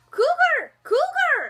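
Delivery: put-on Indian accent, very high and loud. Retelling what a woman said afterward, the speaker quotes her: imitating a woman's indian accent. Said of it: "in her adorable freaking Indian accent".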